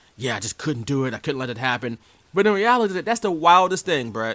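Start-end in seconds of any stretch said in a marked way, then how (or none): 0.2-2.0 mock-serious tone, said more quietly. Retelling how Bret talks about the decision: imitating Bret being serious. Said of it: "He's so serious, and he's like".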